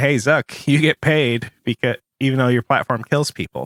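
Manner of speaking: ordinary talk, nothing marked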